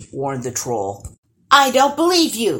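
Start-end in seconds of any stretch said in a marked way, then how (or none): 1.5-2.6 high, loud shouted yell. Answering a troll's threat to turn them into sticks and stones: yelled back. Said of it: "yelled [name] back".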